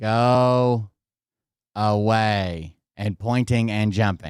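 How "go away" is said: normal talking voice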